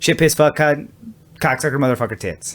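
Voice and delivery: rapid-fire delivery. Retelling how a comedian listed the words, the speaker imitates a really fast delivery. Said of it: "he would say them really fast".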